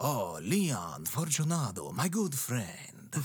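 grand, theatrical stage-vampire voice. Imitating an audiobook character greeting Leon Fortunato, Jim the Vampire voice. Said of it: "It is 100% Mark Hamill doing a vampire voice".

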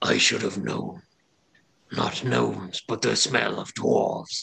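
rough, creaky, monstrous creature voice. Voicing a rusted dragon creature questioning the party: voicing a dragon creature. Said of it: "it recoils a little bit back, and it says".

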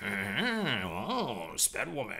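swooping, very cartoonish voice, drawn-out "oh". Retelling dubbing voices onto home movies: cartoonish voice. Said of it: "they were very cartoonish voices".

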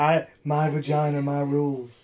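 put-on, mocking sultry female voice. Joking about female empowerment, in a put-on sultry female voice. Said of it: "your sultry female voice you were trying to throw on there".

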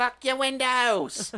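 put-on Cockney accent. Joking about a woman from a news article: put-on Cockney accent. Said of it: "That's so Cockney".

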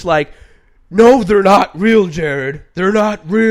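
very loud, drawn-out, slow, high yelling. Acting out how a man yelled at the speaker: retelling his yell. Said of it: "he was, like, yelling at me".

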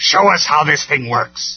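loud, snarling voice. Megatron turns to the terrified engineers and speaks to them again, snarled. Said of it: "he snarled again".

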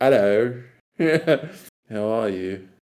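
put-on British accent. Showing how to talk on dates: put-on British accent. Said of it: "I'd be like".

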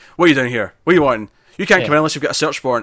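imitated stern voice. Retelling how a character sternly answers the door: imitating a stern tone. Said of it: "She's being really stern".

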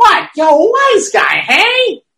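dazed, stunned, very high, slow and drawn out. Acting out getting hit on the head with a lead pipe: play-acting a stunned reaction. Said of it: "lead pipe hitting me in the head and me like".

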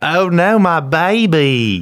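high, loud, slow Southern drawl. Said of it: "She had a really good Southern accent".

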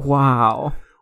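soft-spoken, gentle, understated wow. Showing how the dog's bark reads to them, Owen Wilson voice. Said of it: "I read it as an Owen Wilson".

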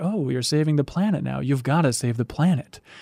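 calm, menacing villain voice. Retelling what a villain said in a game scene: imitating Sephiroth. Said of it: "he's like".

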